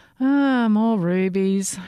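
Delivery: bored, unimpressed words spoken through a yawn. Her highness, presented with gifts one by one, bored, with a yawn. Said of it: "she said with a bored yawn".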